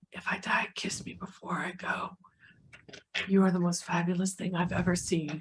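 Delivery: hushed, close-up whisper. As a character bleeding out, whispering into a companion's ear. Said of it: "whispers in Jericho's ear".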